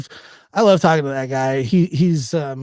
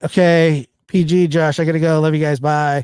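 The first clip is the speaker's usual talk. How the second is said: hurried, rushed, rattled-off, run-together words. Retelling a friend's hurried goodbye before leaving: imitating someone talking fast. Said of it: "That's how fast he said it too".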